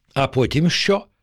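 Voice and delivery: plain reading voice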